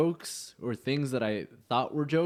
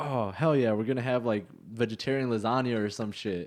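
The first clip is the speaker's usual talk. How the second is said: ordinary talk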